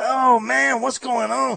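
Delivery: drawn-out, slow, rasping, creaky comedy-record drawl. Telling the guest how fans talk in his voice: Cheech voice. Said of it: "we start talking in your voice like".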